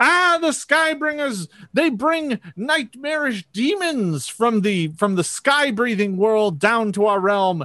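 frantic, terrified, high, drawn-out panicked wailing. A narrator voices the kobolds panicking at the strangers, panicked kobold screaming. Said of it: "the kobolds start screaming".

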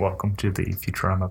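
whispering. Opening the podcast episode, whispering. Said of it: "you're whispering at them".

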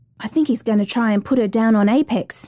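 plain reading voice

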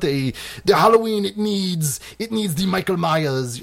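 put-on, bad Italian accent. Quoting Mustafa Akkad about Halloween, in a horrible Italian accent. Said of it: "That's a horrible Italian accent".

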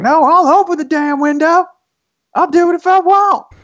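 put-on very high, loud, huffy, heavy Texas accent. Describing grown men arguing over opening a window: extremely thick Texas accent. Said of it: "extremely thick Texas accents being like".

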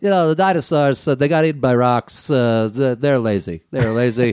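put-on rambling, repetitive politician stump-speech delivery. Joking about dinosaurs being eaten by rocks: Trump voice. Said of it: "trying to do a Trump impression".

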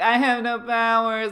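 very loud, high, slow, drawn-out tearful wail, acted. Retelling a crying character's line: imitating a character crying.

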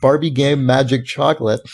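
ordinary talk, nothing marked

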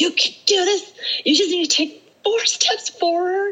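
shrill, high, pushing yell. Speaker retelling pushing on up a hill, retelling yelling at herself. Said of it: "So I just started like yelling at myself".

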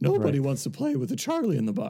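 put-on toy character voice, swooping in pitch. Describing the misfit toys film, Charlie-in-the-Box voice. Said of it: "I told you I would do that voice".

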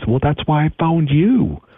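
high, put-on punk-rock screaming. Retelling the opening of a memoir, a call to a suicide hotline: imitating someone screaming. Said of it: "And he just screams".

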